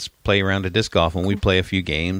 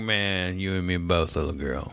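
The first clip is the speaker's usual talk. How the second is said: creepy-sounding delivery, quieter; 6 dB quieter than usual. Retelling what they said to a crying girl outside a store: sounding creepy. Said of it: "don't say it like that".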